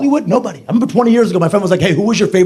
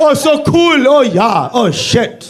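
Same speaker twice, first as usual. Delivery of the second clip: very slow, drawn-out, pitched-up fake German accent; 6 semitones higher than usual. Showing how Americans do Scandinavian accents: put-on German-sounding accent.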